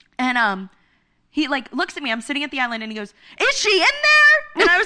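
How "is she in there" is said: very high, slow, loud, drawn-out yell. Retelling a maintenance worker's question inside the apartment: imitating someone yelling. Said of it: "Why are you yelling at me?".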